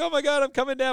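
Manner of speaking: play-acted high, thrilled, eager cry. Retelling what a woman said after a tying home run, retelling her excited cry. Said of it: "And she's all excited".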